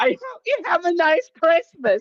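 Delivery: play-acted, very high, shrill, full-throated top-of-lungs shout. Retelling what a guy said, imitating someone yelling at top voice. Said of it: "just yelling at top voice".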